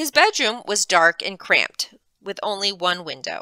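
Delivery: plain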